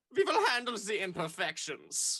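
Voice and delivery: put-on German accent. Acting out German genes promising to fix teeth: German accent. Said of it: "my German genes came in and went".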